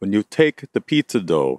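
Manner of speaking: exaggerated, bad, loud, fake Italian accent. Quoting the man who taught them to toss pizza: bad Italian accent. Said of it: "I'm going to say this with a bad Italian accent".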